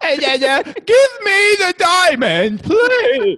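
very high, slow, silly, drawn-out goofy voice. Joking about Uncut Gems in a goofy Adam Sandler voice. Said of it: "talk in his goofy voice".

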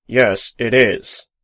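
spoken through gritted, clenched teeth. Reading a story aloud, a character refuses a lift: through gritted teeth. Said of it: "says Bogart through gritted teeth".

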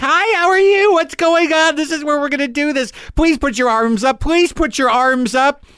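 very high-pitched, manic, eager over-politeness. Retelling how the woman shooting up the heart test sounded: imitating an intense, crazy nurse. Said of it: "intense and crazy and like".

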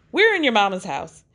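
normal talking voice

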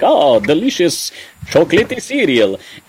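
put-on vampire voice, Transylvanian accent. Speaker describing the original 1972 cereal commercial, quoting Count Chocula's Transylvanian accent. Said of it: "what we assume is a Transylvanian accent".

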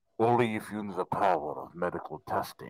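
very low, faked, forced deep voice. Retelling how she sounded in front of a crowd: imitating Elizabeth Holmes's faked public voice. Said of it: "Elizabeth Holmes in public".

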